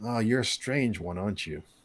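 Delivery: put-on old man character voice. Voicing an old man who calls a player over to see his pots: old man character voice. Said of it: "he's gonna be like".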